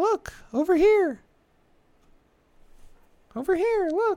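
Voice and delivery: very high, loud fairy voice, called out. Retelling how a child screamed, imitating Navi: Navi voice. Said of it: "he sounded like the fairy from fucking, um, Legend of Zelda".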